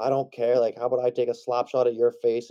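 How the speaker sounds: shrill, full-on screaming tirade. Retelling what someone on the bench said to the ref, retelling a scream at a ref. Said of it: "Stobby was on the bench just screaming at this ref".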